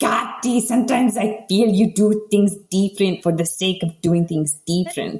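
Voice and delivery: put-on thick Spanish accent. Retelling what the speaker's mom said to the speaker, imitating mom's thick spanish accent. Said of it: "she's got this really thick Spanish accent".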